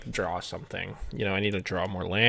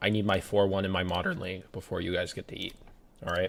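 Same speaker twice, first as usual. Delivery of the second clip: ordinary delivery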